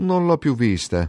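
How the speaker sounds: casual put-on show of not caring. Emilio, asked by Sorniani about Angiolina, replies: feigning indifference. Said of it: "fece Emilio con l'aspetto di indifferente".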